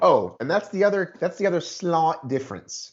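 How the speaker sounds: put-on English accent. Explaining a slight difference in a race format: English accent. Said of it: "that was an English accent".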